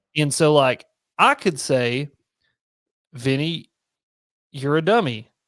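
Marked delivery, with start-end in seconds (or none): 3.1-5.2 mild, unalarming, calm and even-toned delivery. Showing how a spoken insult can sound, unlike text: calm, not angry. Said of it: "when I say it like that, it sounds very unalarming and very like, you know, not not angry".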